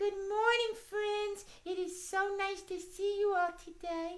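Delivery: very high-pitched tiny mouse puppet voice. Host voicing the puppet greets everyone, in Miss Mousie puppet voice. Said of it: "It's my friend Miss Mousie".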